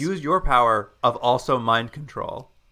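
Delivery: normal talking voice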